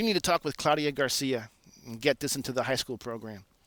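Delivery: ordinary delivery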